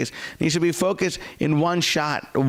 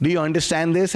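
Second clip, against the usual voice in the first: normal talking voice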